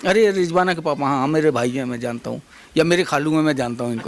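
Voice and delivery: ordinary talk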